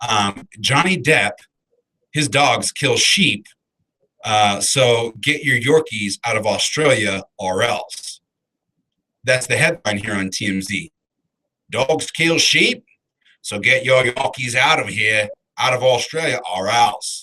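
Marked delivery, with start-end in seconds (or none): 11.7-17.2 horrible, bad put-on Australian accent. Reading a TMZ headline aloud in a horrible Australian accent. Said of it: "That was a horrible accent that time".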